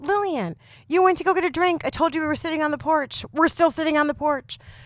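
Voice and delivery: fed-up high yelling. Retelling the moment at their wit's end, retelling a yell. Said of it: "I start yelling at her".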